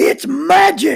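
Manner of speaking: put-on very shrill, rough, very loud little-boy shout. Retelling a little boy in the room yelling out, imitating a little boy yelling. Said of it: "A little boy in the room yells out".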